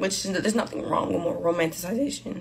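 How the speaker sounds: voice breaking, cracking on the word "romanticization". Speaking about romanticizing the start of a journey with someone, voice cracking. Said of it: "it's like my voice just cracked".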